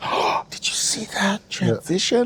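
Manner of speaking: play-acted, slow, breathy, awed whisper of astonishment.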